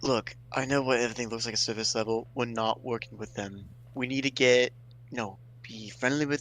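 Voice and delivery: speaking quietly. Speaking in character to everyone in the group: speaking quietly. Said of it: "I like to speak quietly to everyone".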